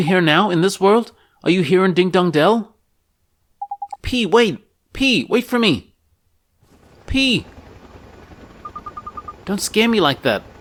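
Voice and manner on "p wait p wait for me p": shouting, at a higher pitch. Voicing a character calling after P, who is leaving: shouting. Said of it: "Why are you shouting?".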